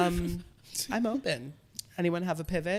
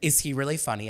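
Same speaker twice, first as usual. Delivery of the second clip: ordinary talk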